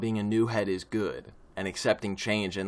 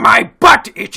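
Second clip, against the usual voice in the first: very loud, high, rough, raspy cartoon voice; 13 semitones higher, 16 dB louder than usual. Giving a line during a bit about replacing the Wario voice, in Wario voice. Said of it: "I can replace him".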